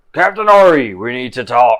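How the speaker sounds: very loud, booming, commanding voice. Voicing a glowing possessed figure addressing the captain: deep booming voice. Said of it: "a deep booming voice coming from him".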